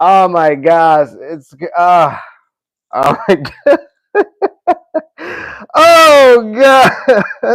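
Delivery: loud, very slow, drawn-out laughing speech. Reacting to a list of fighter names, laughing while talking. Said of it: "I gotta laugh".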